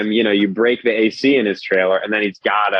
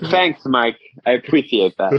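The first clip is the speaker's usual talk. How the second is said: put-on, fake lisping voice; 3 semitones higher than usual. Thanking a friend named Mike: put-on lisp. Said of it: "You're just adding lisps to words".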